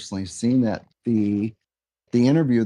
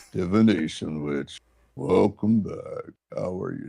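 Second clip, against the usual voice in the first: lower witch voice that sounds like a biker; 3 semitones lower than usual. Asked to try a divination witch voice, the speaker greets listeners: biker-like voice. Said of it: "Kind of sound like a biker".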